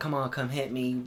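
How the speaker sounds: normal talking voice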